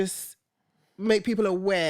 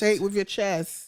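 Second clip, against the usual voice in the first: ordinary talk, nothing marked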